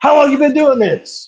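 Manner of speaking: put-on, high-pitched, screamed. Retelling how a man screamed questions at the speaker, imitating someone screaming. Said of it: "He's screaming at me".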